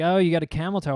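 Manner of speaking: ordinary talk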